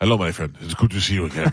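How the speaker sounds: smooth bad-guy villain voice. Imitating the bad guy in the movie preview: smooth Esai Morales voice. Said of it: "He's, like, really smooth".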